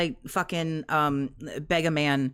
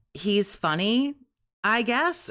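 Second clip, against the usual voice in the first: put-on hesitant, grudging, slow, reluctant delivery; 5 semitones higher than usual. Retelling a stream where Kat is asked her husband's best quality: imitating Kat's reluctant answer. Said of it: "She finally spit out".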